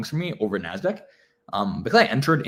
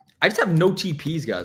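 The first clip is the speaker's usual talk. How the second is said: cracking, breaking voice, cracking up high; 7 semitones higher than usual. Talking viewers through a live trade: voice cracking. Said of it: "I was a voice crack and a half".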